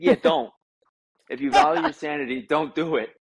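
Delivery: heavy put-on Boston accent. Retelling a call asking for advice, the speaker quotes a man in hardcore boston accent. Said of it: "he has this hardcore Boston accent".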